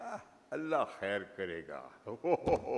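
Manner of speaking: very slow, patronising, condescending drawl. Retelling a cart vendor's reply to sympathy: imitating a condescending vendor. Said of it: "look at you very condescendingly and he'll say".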